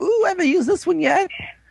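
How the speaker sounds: very high-pitched, excited squeal. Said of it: "Eiji gets all excited".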